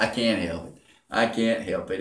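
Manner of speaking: words broken up by giggles. Answering another speaker who teases about the giggling, giggling while talking. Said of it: "You shouldn't be giggling like a schoolgirl".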